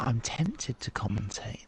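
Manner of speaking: hushed, quiet, discreet aside. Speaking to others in a race control call, speaking quietly. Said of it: "I'm saying this quietly".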